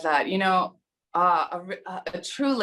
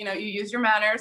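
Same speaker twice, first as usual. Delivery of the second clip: ordinary delivery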